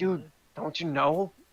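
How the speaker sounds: loud stage whisper that carries. Voicing Simon leaning close to a player: loud whisper. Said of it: "he's still loudly whispering".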